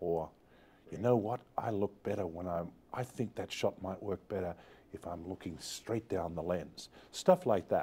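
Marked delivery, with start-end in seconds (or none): 0.9-6.9 very quiet, hushed, polite, almost a half-whisper. Retelling an actor's quiet suggestion on set: imitating Harrison Ford almost half-whispering. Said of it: "very, very quietly, almost in a whisper".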